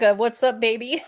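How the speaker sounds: put-on New York accent. Joking about understanding a caller's accent: New York accent. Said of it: "I speak New Yorker".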